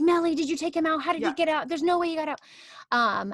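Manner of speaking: high, demanding shouting. Retelling how Mr. A reacted when Sonny got out: imitating Mr. A yelling. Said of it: "A is like yelling".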